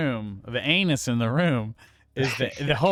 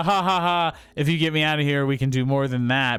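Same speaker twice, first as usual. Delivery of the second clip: mock desperate joking tone. Retelling a captured princess's reply to the hero: imitating desperate joking. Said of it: "like a desperate kind of joking".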